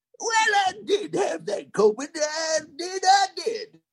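put-on old prospector voice. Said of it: "just did it that way".

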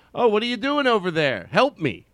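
put-on calling out voice. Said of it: "So I act like I'm".

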